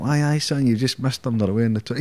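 put-on high Newcastle accent. Retelling what an older prison officer said to him on arrival, Geordie accent. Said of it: "in a Geordie accent".

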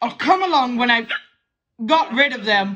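speech broken up by hiccups. A character with the hiccups says they'll come along later: hiccuping. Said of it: "I've got the hiccups are the moment".

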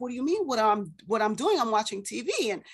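puzzled, baffled voice, stumbling and tripping over words. Retelling own reply to mom while watching TV: imitating own confused reply. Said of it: "very confused, I'm like".

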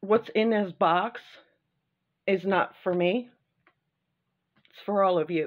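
choked up, overcome with emotion. Host of an unboxing video, speaking to viewers: choked up. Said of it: "Excuse me, sorry. I knew this was going to happen".

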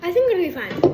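ordinary delivery

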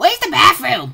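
high, loud cartoon talking-orange voice. Addressing a banana, trying out an orange voice: talking orange voice. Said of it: "I'm going to try to do a orange voice".

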